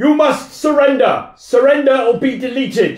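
commanding, very high, loud shouted yell. An armoured rider galloping toward the castle calls out, shouting a demand. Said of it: "gallops towards the castle on horseback and shouts out".

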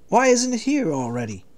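weary, drained, worn-out, slightly high. A man waiting in a food line asks the man ahead of him, weary. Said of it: "He wearily asked the man ahead of him".

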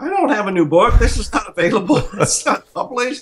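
high, panicked voice.

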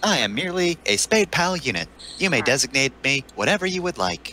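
AI unit character voice. In a role-play game, a player introduces their AI unit character: AI unit character voice. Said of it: "I am [name] Software Spade Pile trademark units. Please designate me as I'm apparently required on this mission".

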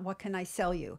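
plain

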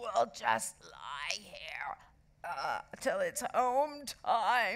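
very slow, drawn-out, groaning moan. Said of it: "moaned Ralph".

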